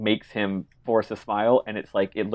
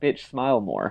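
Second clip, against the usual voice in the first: plain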